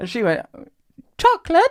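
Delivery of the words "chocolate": put-on very high, loud little-kid toddler voice. Retelling how a two-year-old answered the offer of chocolate: imitating Mabel asking. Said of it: "Like that".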